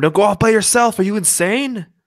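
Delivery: acted, high yell. A character calls to a companion running off alone, yelling after someone. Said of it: "I'd be yelling after him".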